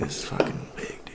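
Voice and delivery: soft, stoned-sounding whisper.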